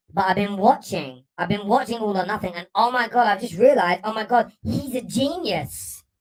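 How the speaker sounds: put-on mocking fan voice. Imitating people tweeting about Mikel Arteta, in a mocking fan voice. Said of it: "I've got to do the voice".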